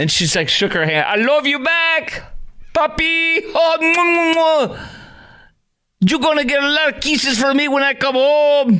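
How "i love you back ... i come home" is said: mocking put-on Spanish-style accent, higher.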